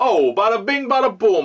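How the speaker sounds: Italian-American accent. A narrator opens a segment on the world of the Sopranos, Italian-American stereotype accent. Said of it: "I sound a bit like an Italian-American stereotype".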